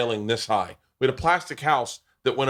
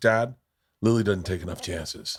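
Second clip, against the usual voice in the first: put-on, dead serious, deadpan child voice; 4 semitones lower than usual. Retelling a five-year-old's reply to her dad: imitating a dead serious child. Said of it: "She looks at me dead serious and goes".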